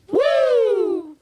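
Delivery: very high, shrill, loud wrestling-style woo yell. Following two claps with a Ric Flair woo. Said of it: "Two claps and a Ric Flair".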